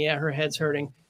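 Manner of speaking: ordinary talk, nothing marked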